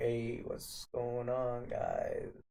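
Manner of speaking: put-on listless, unenthused, very slow voice. Teasing someone's greeting, the speaker imitates it as a mock-unenthused greeting. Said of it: "that was the most unenthused".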